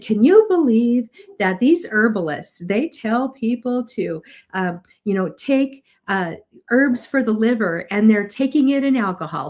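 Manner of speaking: mock laughing-at, ridiculing tone. Retelling a professor's lecture remark about herbalists, imitating a professor mocking herbalists. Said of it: "a professor who was laughing about herbs".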